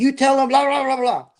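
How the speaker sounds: very high-pitched ranting and raving. Retelling a lieutenant telling the linguist what to say: imitating someone ranting and raving. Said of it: "he's just ranting and raving".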